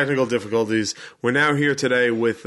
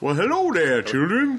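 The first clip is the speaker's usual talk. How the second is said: soulful delivery, raised up in pitch; 6 semitones higher than usual. Asked about the voice they chose, doing Chef from South Park.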